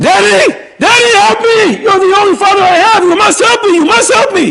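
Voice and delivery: put-on very high, shrill yelling. Retelling a daughter crying out to her father in the water: imitating someone yelling. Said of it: "starts yelling".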